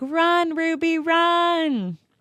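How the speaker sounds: high, slow mock yell. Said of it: "I was yelling at the screen".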